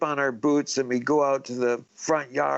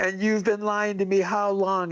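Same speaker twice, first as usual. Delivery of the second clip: put-on yelling, higher pitch; 6 semitones higher than usual. Retelling catching dad lying about Santa: retelling yelling at dad. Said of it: "I started yelling at my dad".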